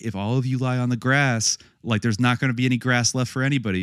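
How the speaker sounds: put-on mild, half-hearted scolding yell, old lady voice. Retelling how an old lady scolded people lying on the grass: imitating a woman yelling. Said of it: "that lady was yelling".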